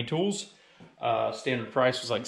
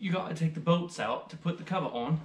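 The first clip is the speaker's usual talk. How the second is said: horrible, bad fake British accent; 4 semitones higher, 3 dB quieter than usual. Talking aloud while assembling a piece, in a horrible British accent. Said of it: "with a horrible British accent".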